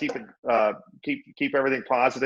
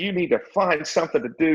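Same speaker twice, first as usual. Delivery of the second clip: put-on woman's yelling voice, higher pitch; 4 semitones higher than usual. Retelling a mother scolding her son: imitating a mother yelling. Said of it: "his mom was yelling at him".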